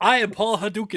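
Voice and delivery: put-on Japanese accent. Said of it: "He says with a Japanese accent".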